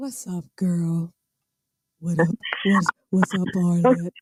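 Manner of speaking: good, low, deep voice. Greeting Arlette as she joins, in a deep-voiced Kings of Kings impersonation. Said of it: "Deep voice, good deep voice girl".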